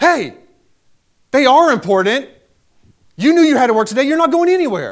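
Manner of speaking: loud, high-pitched yell. Retelling running out of the office and yelling at him across the restaurant. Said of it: "I yelled at him".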